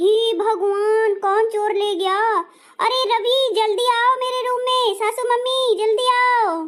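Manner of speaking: calling out loudly at full voice. Missing her necklace box, she calls Ravi and her mother-in-law, shouting. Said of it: "इतना जोर से चिल्लाया जाता है?".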